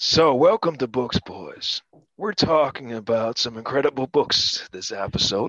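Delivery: sultry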